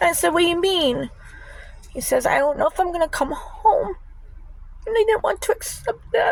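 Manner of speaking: tearful, cracking voice. Recounting when he said he might not come home, crying, voice breaking. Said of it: "Stop crying. That's all I do is cry".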